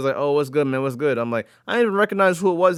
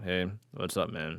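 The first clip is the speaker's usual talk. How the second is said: mock very quiet, slow, mournful drawn-out "hey"; 7 semitones lower, 13 dB quieter than usual. Retelling answering a caller who always wants favors: imitating own sorrowful greeting. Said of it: "the sorrow in my voice".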